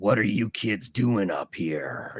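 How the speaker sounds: creepy, breathy whisper, very close to the ear. Retelling a voice heard near a fire and a truck; imitating a whispered voice. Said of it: "sounds like it's whispering in my ear".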